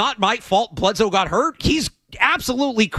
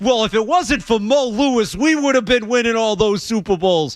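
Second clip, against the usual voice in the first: clumsy, bad, put-on New York accent. Mimicking a Jets fan's complaint, in a bad New York accent. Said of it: "That was a bad New York accent".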